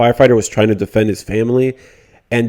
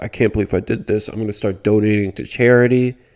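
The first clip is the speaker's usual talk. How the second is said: playacted, mopey, remorseful sad voice; 4 dB quieter than usual. Mocking Boogie's sad-boy routine: mock sad Boogie voice. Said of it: "He's acting all sad".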